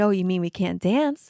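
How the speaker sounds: ordinary delivery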